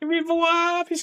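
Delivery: voice with a speech impediment. Mimicking the leader of the crusade walking around, voice with a speech impediment. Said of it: "has got like a speech impediment".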